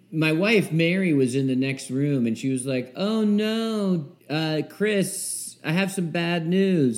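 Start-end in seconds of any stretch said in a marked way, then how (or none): 2.9-7.0 play-acted sorrowful tone, high and very slow. Retelling the wife's call from the next room: imitating Mary's genuinely sad tone. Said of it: "the tone in her voice ... genuinely sad".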